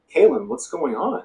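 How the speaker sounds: very calm, easygoing, unruffled, slightly high voice. Narrating Kaylin's roommate walking into her bedroom during a break-in, imitating Carol's calm voice. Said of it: "very calmly say".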